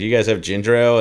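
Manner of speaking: ordinary talk, nothing marked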